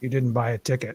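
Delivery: heavenly voice from above. Telling the lottery joke, delivering the punchline in a booming voice. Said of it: "the booming voice says".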